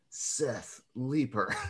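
slow, drawn-out movie trailer announcer voice. Host introduces the next reader in a slow movie promo voice. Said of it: "in that really like slow movie promo voice".

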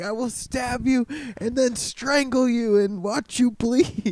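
put-on, high-pitched, furious sudden outburst of rage. Retelling a phone call where a guy flipped out: imitating someone flipping out. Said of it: "and he flipped out".

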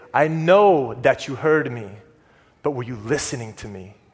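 put-on motherly, gently stern, low, sweet grandmother voice. Recalling being caught not listening, imitating sweet, stern grandma. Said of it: "in that sweet grandma, motherly, stern voice".

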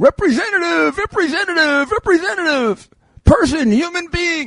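play-acted, very high, repeated yelling. Acting out callers yelling at a phone menu for a person: yelling at a phone menu. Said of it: "you're yelling".

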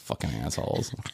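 quiet muttered mumble. Retelling letting others go first in front of the kids, the speaker retells mumbling under breath. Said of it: "mumbling under my breath".

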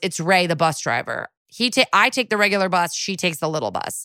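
ordinary delivery

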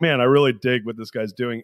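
ordinary talk

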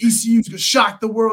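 mock yelling. Retelling a man yelling a betting tip in the clubhouse: imitating someone yelling. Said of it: "yelling this in the, uh, in the clubhouse".

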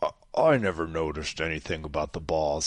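voice dropped way down. Answering a mock interview question, slipping into a Bill Walton voice. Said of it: "I sound like Bill Walton".

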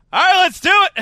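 high, loud, pumped-up excited shout.

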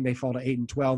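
plain

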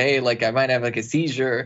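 ordinary talk, nothing marked

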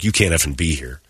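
put-on mean tone. Retelling what he said when a woman the cops took away showed up, retelling being mean. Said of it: "I'm like, mean".

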